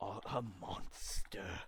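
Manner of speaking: low-toned, breathy whisper. A game master voices a figure trapped in a circle confronting Adrian, low tone. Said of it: "And he says in a low tone".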